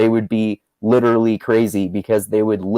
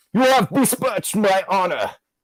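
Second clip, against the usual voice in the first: very high, mocking posh upper-class caricature voice; 10 semitones higher, 3 dB quieter than usual. Riffing with others on a complaint, caricature of an upper-class person. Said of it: "caricature of some like upper class person".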